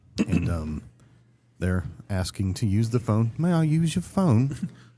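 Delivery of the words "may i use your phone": put-on, weird old-fashioned English accent, higher pitched. Imitating strange kids asking to use the phone: imitating weird old English-style talking. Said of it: "they just speak weird".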